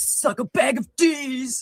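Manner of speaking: awful put-on drawl, high and very slow. Mocking the other speaker with a bad impersonation of the other speaker. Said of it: "the worst impress-, impersonation ever".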